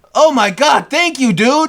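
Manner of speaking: mock embarrassingly loud, high burst. Retelling own words to a stranger over five dollars: imitating own loud thanks. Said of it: "That's what I said, loud".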